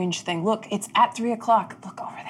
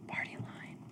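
whispered, very quiet, barely audible. Speaking in character after poking a party member with a staff: as quietly as possible. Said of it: "as quietly as I can".

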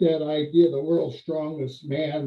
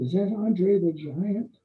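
put-on whisper, higher; 4 semitones higher than usual. Retelling what a young wrestler whispered in the locker room: imitating someone whispering. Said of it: "he whispers to me".

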